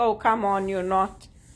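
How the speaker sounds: normal talking voice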